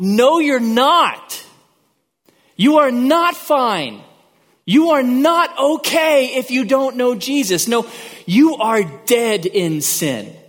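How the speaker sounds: very slow, high, drawn-out, put-on screaming. Retelling a voice in the back of the head: imitating a screaming inner voice. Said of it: "and it screams out".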